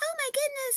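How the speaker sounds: imitated mouse character voice. Retelling a player's mouse character voice: imitating a mouse character voice. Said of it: "so his voice is very".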